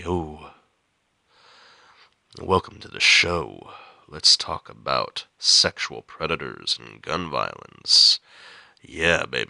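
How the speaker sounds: very low, sultry, seductive, sexy voice. Getting over a cold, the speaker plays with a sexy voice welcoming the show. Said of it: "I got a sexy voice. I'm like".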